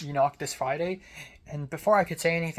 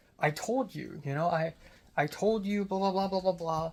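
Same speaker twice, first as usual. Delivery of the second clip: angry, pissed-off voice; 3 semitones higher, 4 dB quieter than usual. Retelling what the TA said when he got mad: imitating an angry TA. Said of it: "He got pissed near the end".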